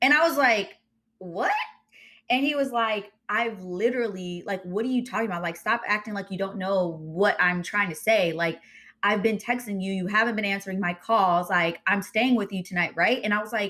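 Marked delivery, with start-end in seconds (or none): none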